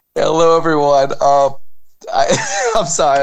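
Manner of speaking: slow, giggly speech broken by laughter. Greeting everyone at the start of the show, laughing while talking. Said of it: "I'm just laughing at some".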